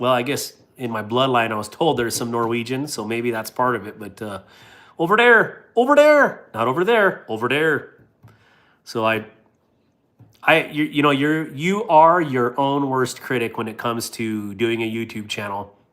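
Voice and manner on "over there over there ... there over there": strong, laid-on, swooping North Dakota accent. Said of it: "a North Dakotan accent".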